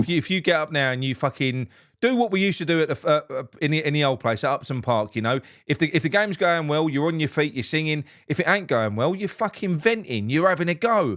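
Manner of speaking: normal talking voice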